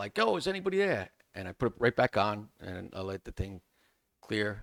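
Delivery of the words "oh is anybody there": shrill, high, loud yelled call. Retelling pulling the face piece off in a smoke-filled building: imitating own yell. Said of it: "I just yelled out".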